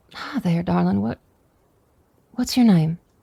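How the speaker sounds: kind, gentle, easy voice. Sitting beside a dying soldier in character, speaking very softly. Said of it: "I'll just sit down and very softly".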